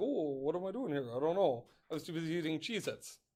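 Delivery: teasing student voice, put on for laughs. Speaker in math class imitates a student who was eating Cheez-Its, impression of a student. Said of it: "Do you like my impression of you?".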